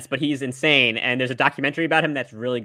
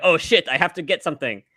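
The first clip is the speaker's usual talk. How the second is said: vague, generic put-on foreign accent, non-American; 4 semitones higher than usual. Imitating a president rushing to find a gift: generic non-American accent. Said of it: "Is that a Japanese accent you put on?".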